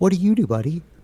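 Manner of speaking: patronizing, talking-down tone. Retelling a guy at an event questioning the photographer: imitating a condescending tone. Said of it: "kinda condescending".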